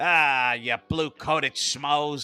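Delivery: slow, drawn-out, stretched-long hollered yell. Quoting a favorite moment where a character yells at the cops, retelling a yell. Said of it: "I like when he yells".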